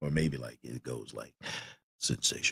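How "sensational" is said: big, heavy, deep baritone announcer voice. Imitating a guy who says the word: imitating a heavy baritone voice. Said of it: "his voice is heavy baritone".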